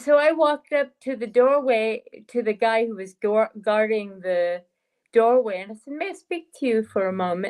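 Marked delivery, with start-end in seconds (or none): 5.9-7.5 acted flirtatious, inviting manner. Retelling asking a doorway guard for a word: retelling own flirtatious line. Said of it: "in my best flirtatious manner".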